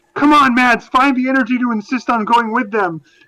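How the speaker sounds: high, frustrated, pleading mock scream. Retelling urging someone to insist on going along: imitating own past screaming. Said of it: "I was screaming at Mads".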